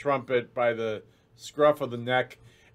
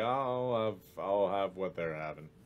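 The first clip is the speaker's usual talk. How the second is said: sleepy, low, soft voice, talking mid-yawn; 5 semitones lower, 10 dB quieter than usual. Narrator voices a familiar character speaking from behind the players: Eldred's yawny voice. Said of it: "a familiar yawny voice say".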